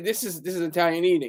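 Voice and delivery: ordinary talk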